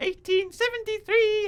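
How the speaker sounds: imitated female voice. Describing a man who impersonates the wife's voice: put-on woman's voice. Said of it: "he impersonates the wife's voice by going, you know, ... like that".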